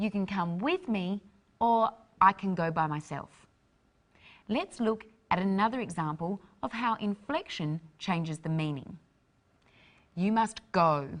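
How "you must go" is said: forceful, ordering delivery. Showing how inflection changes meaning, ordering someone to go away. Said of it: "ordering someone to go away".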